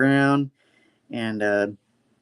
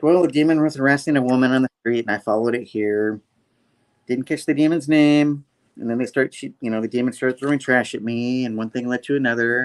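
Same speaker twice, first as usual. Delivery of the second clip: normal talking voice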